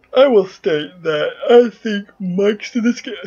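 words stretched out while yawning. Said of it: "I'm yawning".

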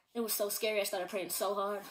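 normal talking voice

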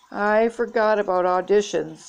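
ordinary talk

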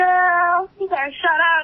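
mocking put-on voice with "girl" drawn out. Teasing someone about how he talks, mocking imitation of his voice. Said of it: "That's what you fucking sound like".

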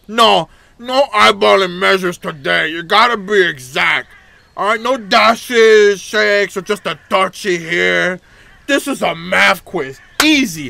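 acted character voice, high-pitched and loud. In a game, the talking bread character speaks: Chompette bread voice. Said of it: "Everyone's secret favorite chompette bread".

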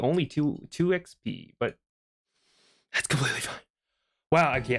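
winded, out of breath. Playing a video game on camera just after a run to the store, out of breath. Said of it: "I didn't realize how out of breath I am right now".

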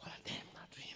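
soft, awed, unvoiced whisper.

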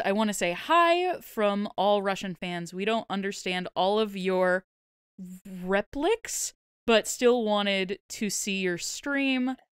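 ordinary talk

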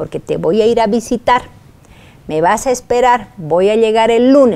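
ordinary talk, nothing marked

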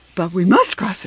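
ordinary delivery

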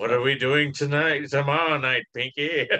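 put-on slow, measured, drawn-out old-time radio voice. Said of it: "deep, uh, kind of Orsonian Welles voice".

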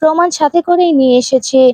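plain

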